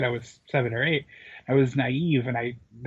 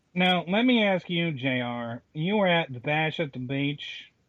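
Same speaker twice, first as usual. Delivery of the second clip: bad, slow, husky put-on Southern drawl; 3 semitones higher than usual. Trying a hand at the same podcast-host bit: attempted southern accent with extra husk. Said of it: "I can't do Southern accents well".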